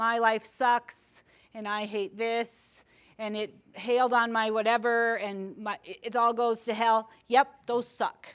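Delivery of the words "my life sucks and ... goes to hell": normal talking voice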